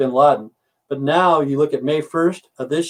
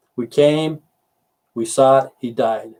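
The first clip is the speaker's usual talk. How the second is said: normal talking voice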